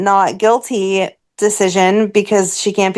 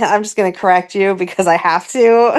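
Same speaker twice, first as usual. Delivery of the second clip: ordinary talk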